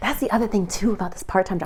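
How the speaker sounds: soft, hushed whisper under the breath. Talking to viewers about quitting a part-time job, whispering. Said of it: "I don't know why I'm whispering".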